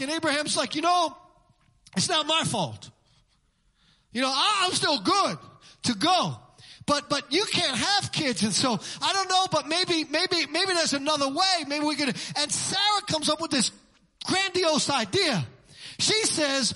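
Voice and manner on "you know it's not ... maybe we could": ordinary delivery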